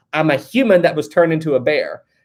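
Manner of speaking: normal talking voice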